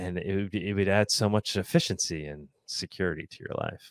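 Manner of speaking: dry, tongue-in-cheek, ironic sarcasm. Commenting to viewers on a news quote just read: ironic, sarcastic tone. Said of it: "I'm being, uh, ironic here and sarcastic".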